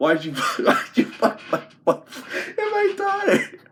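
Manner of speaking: put-on very high, outraged, mildly angry yell. Recounting what a man screamed at the speaker, retelling an angry scream. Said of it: "he's like screaming at me".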